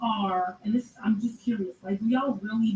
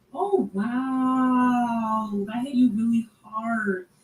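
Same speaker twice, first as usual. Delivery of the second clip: very slow mocking sarcasm, "wow" drawn out. Reacting to a man's quote about being rejected: sarcastic tone. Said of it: "You hear the sarcasm in her voice?".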